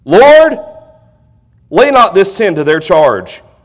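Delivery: crying out with a loud voice.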